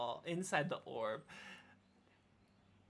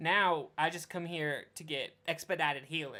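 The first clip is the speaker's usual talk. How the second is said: normal talking voice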